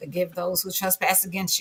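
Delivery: ordinary delivery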